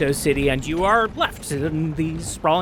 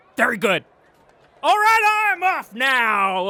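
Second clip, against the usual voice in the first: very loud, high, booming, with "now" drawn out; 9 semitones higher than usual. Saying goodbye and leaving the group: really loud. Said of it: "I'm sorry I was really loud".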